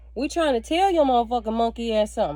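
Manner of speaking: ordinary talk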